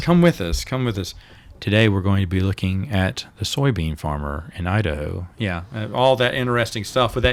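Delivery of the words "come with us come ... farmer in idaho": bland, flat yet authoritative delivery. Mocking a public radio opening after being asked: bland but authoritative National Public Radio voice. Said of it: "they have that bland but authoritative voice".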